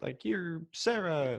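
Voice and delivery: parody of stiff acting. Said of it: "I'm doing the same voice I did for Spaceballs".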